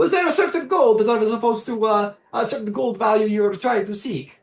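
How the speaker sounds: very high gnome voice with put-on Italian accent. Voicing the gnome who returns an item to the table, in an italian accent. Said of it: "it's supposed to be Italian".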